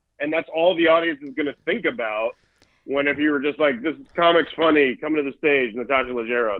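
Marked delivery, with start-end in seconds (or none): none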